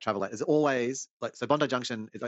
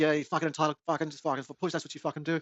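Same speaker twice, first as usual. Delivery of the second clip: put-on angry ranting, higher; 5 semitones higher than usual. Retelling a man ripping into another man: imitating someone ripping into a man. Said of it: "this dude just starts ripping in".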